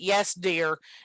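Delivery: put-on sarcastic tone. Retelling how he says the reply now: imitating a sarcastic tone. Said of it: "'cause he says it sarcastically".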